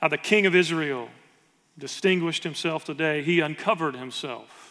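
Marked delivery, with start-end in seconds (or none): none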